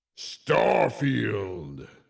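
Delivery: strange voice effect. Giving in to a request, the speaker says the game's name with the weird voice thing. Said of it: "say Starfield with the weird uh, voice thing".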